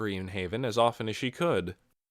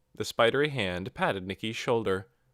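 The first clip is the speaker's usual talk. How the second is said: ordinary delivery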